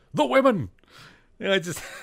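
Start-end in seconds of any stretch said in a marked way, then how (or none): 0.1-0.7 shrill, loud, sudden panicked cry. Retelling a TV scene where Spock realizes the women were taken: imitating Spock yelling. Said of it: "he just yells".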